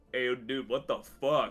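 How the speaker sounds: big, loud, thundering booming voice. Pretending to speak into a pastor's head: loud booming voice. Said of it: "I'd just be like a loud booming voice like".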